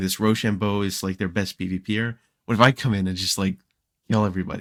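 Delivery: plain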